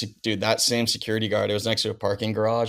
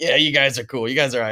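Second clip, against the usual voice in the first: put-on East Coast accent, higher pitch; 3 semitones higher, 3 dB louder than usual. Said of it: "I love your JoJo impression".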